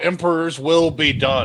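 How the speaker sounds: yelling, shouting out. Voicing a character after setting a tent alight: yelling out. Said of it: "I'm gonna yell out".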